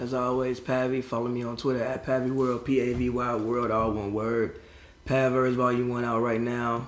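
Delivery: hushed, very quiet, slow, very sad and downcast. Giving a social media plug when asked, sounding very sad. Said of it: "You sound mad sad, my friend".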